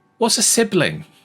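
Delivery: bright, very high-pitched voice. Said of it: "you just hear a bright voice say".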